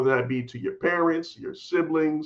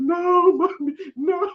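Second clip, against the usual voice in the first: mock crying tantrum, higher and louder; 4 dB louder than usual. Retelling a tantrum at the daycare steps: imitating own childhood crying. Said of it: "I just flipped out and I started crying".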